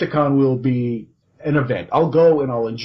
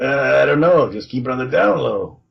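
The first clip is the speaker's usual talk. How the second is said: put-on sketchy Brooklyn street-hustler accent with rough edge. Asked why he talks like that, the reply comes in Community Pat's sketchy Brooklyn voice. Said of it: "Like a kind of like a sketchy guy from Brooklyn who sells watches out of a trench coat".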